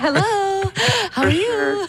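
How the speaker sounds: high, sugary, sweet voice. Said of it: "the mom phone voice".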